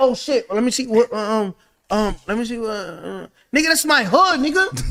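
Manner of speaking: mock, put-on stammering speech. Imitating someone not from the area: imitating someone stuttering. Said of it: "gonna be start stuttering".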